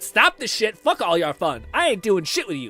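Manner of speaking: tearful, swooping, crying outburst. Retelling shouting at dad as a kid on a ride: retelling own crying outburst. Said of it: "I started crying".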